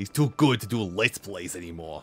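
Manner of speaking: put-on voice that sounds painful. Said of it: "one of the few voices that I'm doing that probably sounds like it hurts like hell".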